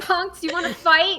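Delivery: very loud, high-pitched goading, taunting yell. Playing a character who yells to draw the snails' attention: yelling taunt.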